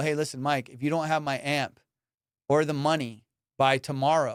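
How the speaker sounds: normal talking voice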